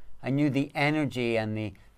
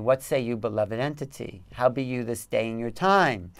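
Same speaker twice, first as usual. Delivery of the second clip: put-on grand, dramatic, old-stage theatrical declaiming. Retelling what a channeled warrior entity said: imitating a dramatic Shakespearean voice. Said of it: "It's like Shakespeare, like Shakespearean. It's very dramatic".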